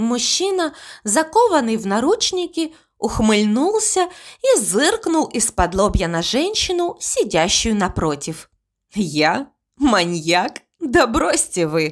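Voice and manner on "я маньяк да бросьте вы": through gritted teeth, lower and slower. A handcuffed man answers the woman sitting opposite, through gritted teeth. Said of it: "Процедил он сквозь зубы и еще больше осклабился".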